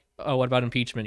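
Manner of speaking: ordinary talk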